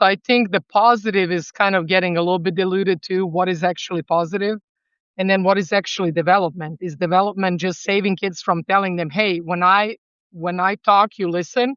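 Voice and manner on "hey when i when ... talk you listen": normal talking voice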